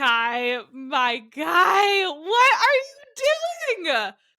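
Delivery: furious high loud cry. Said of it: "all I felt was rage".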